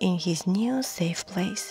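plain

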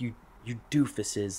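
put-on woman's yelling, lightly scolding bite. Retelling a study-hall story, imitating the lady who started yelling at them. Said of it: "this lady just starts yelling at us".

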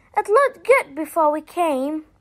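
ordinary talk

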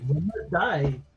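dry, sarcastic, mocking tone. Voicing a character after sacrificing a rat on the altar: sarcastic. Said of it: "With a sarcastic".

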